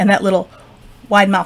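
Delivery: plain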